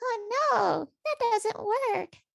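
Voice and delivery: tiny, very high, squeaky, slow little voice. Showing the voice used when puzzle pieces don't fit: a little voice. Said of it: "doing this like little voice that's like".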